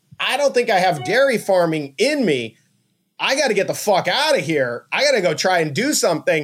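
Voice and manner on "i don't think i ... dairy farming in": usual speaking voice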